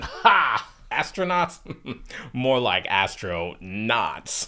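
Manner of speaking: slow, smug, egotistical, know-it-all gotcha tone. Retelling how a man dismissed astronauts: imitating a smug, egotistical tone. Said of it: "smug, egotistical sound to his voice".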